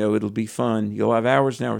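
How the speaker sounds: normal talking voice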